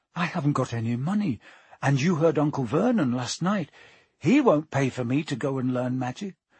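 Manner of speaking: ordinary delivery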